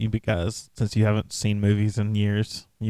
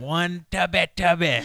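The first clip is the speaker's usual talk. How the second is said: put-on drill instructor yell, higher pitch; 8 semitones higher than usual. Quoting the drill instructor at kids doing push-ups: imitating Major Payne yelling. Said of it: "that's what Major Payne yells at the kids".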